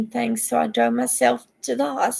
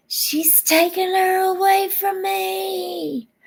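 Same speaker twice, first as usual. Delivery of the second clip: mock high-pitched scream with the word me stretched long; 8 semitones higher than usual. Retelling what he screamed while calling the police: imitating someone screaming. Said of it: "he started screaming".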